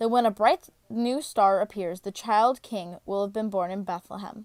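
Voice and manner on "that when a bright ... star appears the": usual speaking voice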